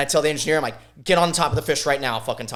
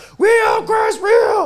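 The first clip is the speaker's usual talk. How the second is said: high, loud screaming right up close; 7 dB louder than usual. Retelling a fishing trip, urging the one reeling in a fish, retelling a scream. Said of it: "screaming in his ear while he's reeling".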